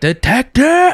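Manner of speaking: high, slow, drawn-out scream.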